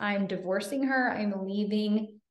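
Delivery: ordinary delivery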